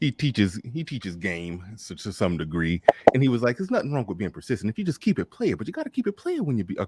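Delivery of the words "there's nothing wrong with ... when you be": rattled off fast, pitch swinging up and down. Quoting a man who teaches game on being persistent, do a Saint in the Center impression. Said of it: "that was my Saint in the Center impression".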